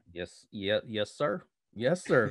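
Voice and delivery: put-on Southern accent. Joking about being back from Texas, answering in a put-on Southern accent. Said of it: "I'm gonna speak with a Southern accent".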